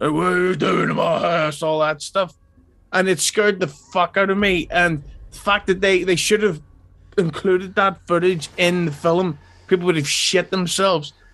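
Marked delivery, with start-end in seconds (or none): 0.0-1.6 put-on elderly man's voice with English Cockney accent. Retelling footage of a possessed young girl speaking: old Cockney man's voice. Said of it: "started speaking like a 70-year-old English Cockney guy".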